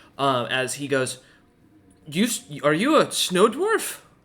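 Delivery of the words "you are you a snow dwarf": odd put-on dwarf voice, high and swooping. Recounting a dwarf asking another character a question, weird-sounding dwarvish voice. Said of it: "a very weird sounding dwarvish".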